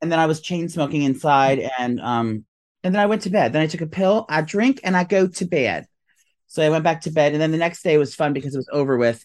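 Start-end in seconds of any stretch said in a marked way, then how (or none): 3.5-5.9 sudden, abrupt, put-on Southern accent. Quoting a line from a movie, random southern accent. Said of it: "you just did a random freaking Southern accent?".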